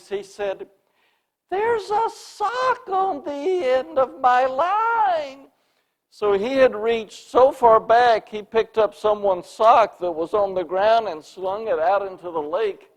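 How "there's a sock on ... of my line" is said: put-on very high, shrill little boy's voice, drawn out. Retelling what a boy said while casting into the lake, high shrill boy's voice. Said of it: "in his high, shrilly pitched boy's voice".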